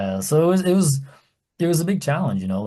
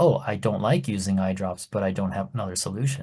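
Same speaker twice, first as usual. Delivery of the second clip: plain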